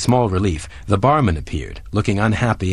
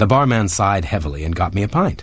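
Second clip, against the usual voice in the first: ordinary delivery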